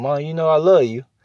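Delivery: put-on soft, sweet, toned-down voice. Speaker acts out a kid sweet-talking their mama, mimicking a soft, toned-down voice. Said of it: "you talk all soft like this right here".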